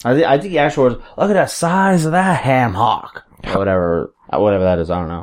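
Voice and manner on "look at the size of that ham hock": high, slow, stretched-out ringside commentator voice. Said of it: "you hear it in Piper's voice now".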